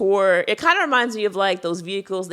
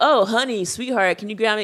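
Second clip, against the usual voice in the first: put-on older man's voice; 3 semitones higher than usual. Retelling how older male customers address a server: imitating an older man. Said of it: "typically older males".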